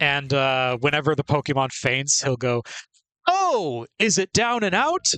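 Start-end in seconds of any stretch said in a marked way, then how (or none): 3.3-5.0 big, exaggerated delivery with pitch swinging up and down. Recalling a game's voice lines, the speaker does the Pokemon Stadium announcer voice. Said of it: "my impression of the Pokemon Stadium announcer".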